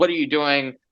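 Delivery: play-acted furious, angry, demanding tone. Retelling how retailers reacted to the narrower leg opening: imitating furious retailers. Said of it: "furious retailers".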